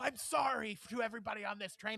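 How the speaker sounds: angry yell, fired off angrily. Retelling a man on a train apologizing to everyone: imitating his angry yelling. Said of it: "in the same yelling voice apologized".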